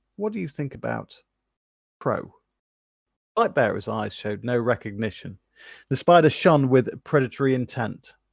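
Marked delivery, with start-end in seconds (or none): 0.2-2.4 sly, low, gravelly hushed voice. Reading a story aloud, a character asks a new name: lowered, gravelly, hushed voice. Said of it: "His voice lowered, gravelly and hushed".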